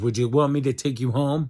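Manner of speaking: put-on irritated snapping. Recounting what a woman on several meds said to them: imitating her snapping. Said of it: "she snapped at me and goes".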